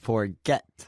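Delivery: forget with stressed second syllable get. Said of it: "This one has a stress on the second syllable".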